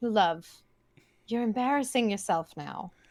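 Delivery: flat, expressionless deadpan delivery. Character responds to a man reaching for her, deadpan. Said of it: "Just deadpan".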